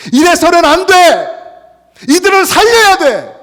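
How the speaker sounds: most anguished cry, very high and loud.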